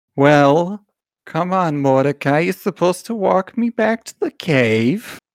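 high, dear, doting voice, drawn-out "cave". Narrator voicing your mother, calling mordecai to walk her home, in a doting mother voice. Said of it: "the voice of your dear doting mother".

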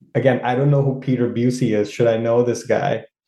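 normal talking voice

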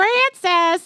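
super annoying, very high, loud voice. Retelling a podcast scene of a husband calling his wife: imitating a super annoying voice. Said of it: "he's got this super annoying voice".

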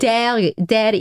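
bad, failed attempt at an Irish accent. Imitating how the show's people say the place name: failed Irish accent attempt. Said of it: "I can't do it".

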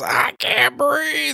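very high, creaky, choked, squeezed-out voice. Retelling a comedy scene, imitating Chris Farley choking. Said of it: "he starts choking".

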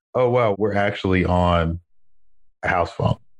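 usual speaking voice

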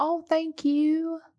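put-on very high, soft rural country accent. Speaker acts out thanking people who compliment their eyes, country accent. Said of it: "the country accent comes out".

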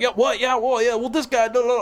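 put-on brash, loud chatter. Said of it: "trying to talk to you like this".

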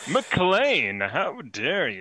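swooping sitcom boss character voice. Voicing a character based on Elaine's boss, in a Seinfeld character voice. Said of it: "I based his voice on uh, a Seinfeld character".

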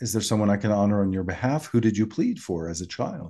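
ordinary delivery

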